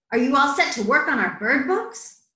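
ordinary delivery

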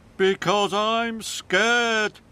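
groaning. Hector, a new truck, answers Thomas, moaning. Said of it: "moaned Hector".

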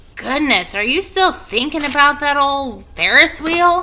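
loud, high-pitched, scornful, disgusted scoff. Replying to a companion's remark, the speaker answers in disgust. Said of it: "said Avery in disgust".

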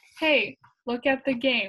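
plain reading voice

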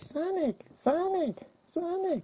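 very high-pitched, grating, annoying character voice. Imitating how a character from the games calls out, in her most annoying voice. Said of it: "she's always got the most annoying voice".

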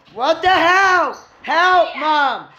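yelling, very high-pitched. Calling for help after a sudden scare, yelling for help. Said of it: "Don't yell".

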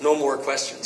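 plain

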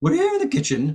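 very high head voice cracking into chest voice. Showing the silly way that Julia Child talked, in Julia Child head voice cracking into chest voice. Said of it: "always sort of in head voice and then cracking into chest voice".

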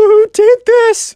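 play-acted, very high, loud, tearful whimpering cry. Retelling the Minecraft kid's reaction after the blast, in a mock-crying whimpery voice. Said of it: "Kind of like a crying".

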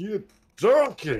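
very high, demeaning, belittling tone. Recalling a line first heard on Kitchen Nightmare, demeaning Ramsay impression. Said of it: "so demeaning at the same time, the way he says it".

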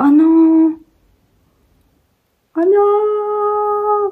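high, dismayed, crying wail.

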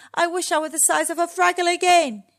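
loud, high, forceful yell. Booba making a wish as the sun sets, yelling. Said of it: "yelled Booba".

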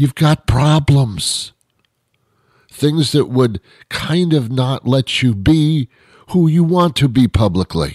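theatrical whisper. Mid-monologue, the speaker catches themself talking in a loud whisper. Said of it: "I don't know why I'm talking like this in a loud whisper".

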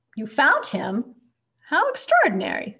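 loud, outright exclamation. The doctor reacting to Mrs. Prim's answer about Lyle, exclaiming. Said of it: "exclaimed the doctor".

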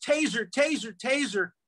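high, mild mock yell. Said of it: "she yells".

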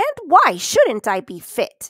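sharp, drawn-out tone. A woman at the gate answers a stranger who says she looks fit, retorting. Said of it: "she retorted".

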